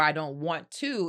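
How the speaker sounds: normal talking voice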